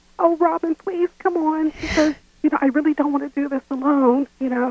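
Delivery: put-on little-kid voice, begging and pleading. Asked to imitate how she pressed to go out after hearing no, childlike voice. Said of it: "she would go into a childlike voice".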